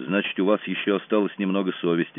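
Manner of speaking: plain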